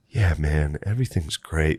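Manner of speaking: soft, flat, dead-level droning monotone. Recalling hallucinating while Butterly talked now and then, imitating Butterly's monotone. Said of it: "Like this real monotone thing".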